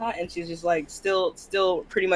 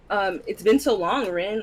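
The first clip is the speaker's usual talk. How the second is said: usual speaking voice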